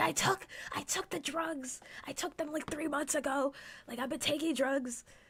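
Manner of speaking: very high, shrill yell. Retelling talking loudly through pharmacy glass: retelling own yelling. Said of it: "yelling at you about my medical history".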